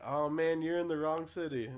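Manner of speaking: very loud, high, jokey ribbing tone. Retelling a remark made to a stranger in a bathroom: imitating own joking remark, smiling. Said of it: "And I jokingly".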